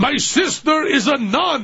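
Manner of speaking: put-on high-pitched German accent. Retelling what Fischbacher said, standing up, to a funny man; Fischbacher's German accent. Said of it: "said in his German accent".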